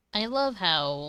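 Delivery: sarcastic, mocking delivery. Complaining that the avatar model fails to track the mouth: sarcastic. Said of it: "and I'm saying this sarcastically".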